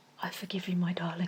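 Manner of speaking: magnanimous, gracious, forgiving tone. Retelling what Taras said to Reggie: Taras impression. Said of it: "we've got a Taras impression going on".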